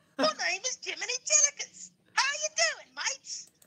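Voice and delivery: put-on British accent, chatty and casual. While everyone waits, introducing yourself in a put-on british accent. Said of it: "I might as well talk in the British voice".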